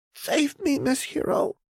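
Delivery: hushed, pained, very high-pitched and slow pleading tone. A trembling girl speaks to the hero who picked her up, quiet and pained. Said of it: "The girl's voice was quiet and full of a pain".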